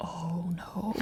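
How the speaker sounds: hushed, whispered, panicked tone.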